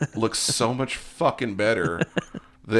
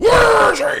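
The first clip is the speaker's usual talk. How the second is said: loud, high-pitched, spitting delivery; 11 dB louder than usual. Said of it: "all spitting at you".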